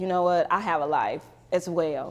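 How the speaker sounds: ordinary talk, nothing marked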